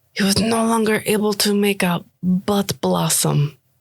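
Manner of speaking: soft, whispered speech. Telling a character about an uncle's trouble, looking at another, whispering. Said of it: "looks like Renat and, like, whispers".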